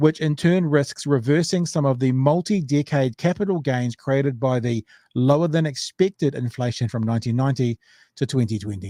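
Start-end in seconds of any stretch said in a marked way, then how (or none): none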